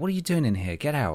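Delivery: mocking, rude put-on voice. Imitating imagined rude medical staff telling a healthy patient to leave: imitating rude medical staff. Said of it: "they'd be like".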